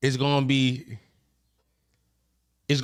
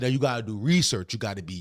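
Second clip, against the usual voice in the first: low, lecturing put-on dad voice. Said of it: "that's how I voice sound when I do it".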